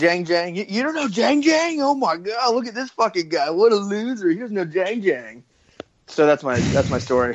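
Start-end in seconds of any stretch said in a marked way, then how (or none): 0.6-5.4 high-pitched, derisive, mocking put-on yelling. Retelling how Twitter nerds reacted to a tweet: imitating them yelling. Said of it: "yelling at me and were like".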